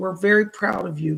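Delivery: normal talking voice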